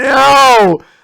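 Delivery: loud, high shouting.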